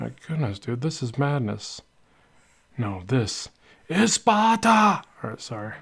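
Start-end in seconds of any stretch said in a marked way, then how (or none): 2.8-5.0 pitched-up, toned-down battle cry, held back. Joking while drawing, quoting a favorite movie line: Gerard Butler impression. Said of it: "trying to sound like Gerard Butler".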